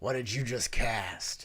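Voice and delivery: put-on bugbear monster voice. Voicing a bugbear asking what spell was cast: bugbear voice. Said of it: "And he says".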